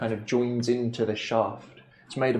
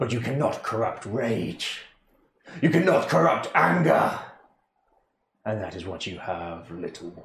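strong, deep, powerful spirit-like voice. A voice speaks inside the listener's head, deep, powerful voice. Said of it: "You hear a deep, powerful, strong voice in your head".

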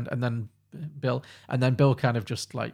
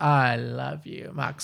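put-on drunken slurring, much slower. Retelling her reply when the producer asked for Alka-Seltzer, mock-drunk slurring. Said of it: "that very drunk".

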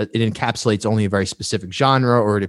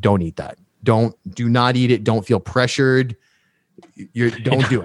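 mock dead-serious voice, slower. Retelling what a friend said while taping a podcast together, imitating Dante Bellini, dead serious. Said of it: "like in a dead serious voice".

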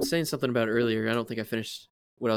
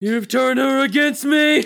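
very high-pitched, very loud, belted outburst; 14 semitones higher, 11 dB louder than usual. Quoting a Star Wars line: Hayden Christensen impression. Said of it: "dub yourself as, uh, as Hayden Christensen".

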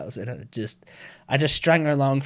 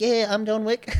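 voice pitched way up, very high; 10 semitones higher than usual. Retelling answering the caller back in the same way: imitating the Filipino caller's way of talking. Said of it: "So I just started talking like that back".

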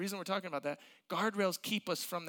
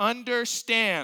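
"understand" repeated, louder and said with more force; 4 semitones higher, 7 dB louder than usual. Mimicking someone re-explaining by repeating a word: loud understand. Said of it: "Because you said it louder".

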